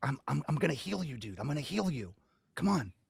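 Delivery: hushed whisper. A player's character offers to heal a companion, whispering. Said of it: "I'm gonna whisper in like".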